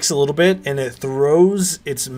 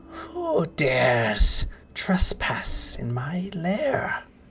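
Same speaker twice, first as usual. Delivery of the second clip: put-on very slow, swooping old elf woman voice, "dares" drawn out; 2 semitones higher, 4 dB quieter than usual. Voicing an old elven woman who confronts trespassers: old elven woman's voice. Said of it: "this woman speaks out and she says".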